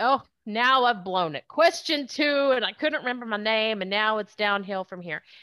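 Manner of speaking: flustered, panicky, freaked-out voice. Acting out a job candidate's thoughts after a blunder: imitating a freaked-out candidate. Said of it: "they get freaked out".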